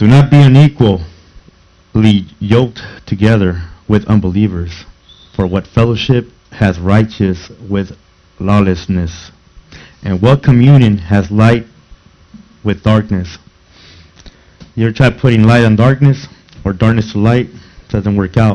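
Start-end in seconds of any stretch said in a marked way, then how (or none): 0.0-13.4 very slow, deep, drawn-out reading. Speaker rereading a scripture passage aloud, in slow motion. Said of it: "Let's read that again in slow motion".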